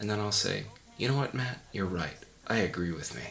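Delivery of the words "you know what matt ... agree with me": plain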